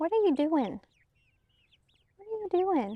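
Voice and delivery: high, sweet pet-talk voice.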